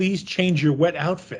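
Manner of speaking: ordinary talk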